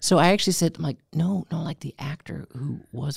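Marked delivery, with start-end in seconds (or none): 1.1-3.2 soft, slow, hushed stage half-whisper. Retelling telling a kid in a movie theater: retelling a half-whisper. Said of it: "and I'm trying to whisper".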